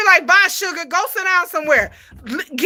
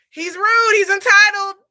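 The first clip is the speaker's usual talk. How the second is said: normal talking voice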